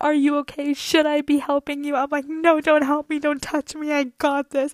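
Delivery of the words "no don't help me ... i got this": mock panicked, freaking-out delivery. Retelling hanging off a fence and answering her dad, acting out freaking out. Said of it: "I'm freaking out".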